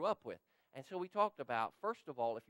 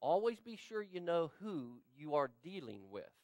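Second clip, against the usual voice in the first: normal talking voice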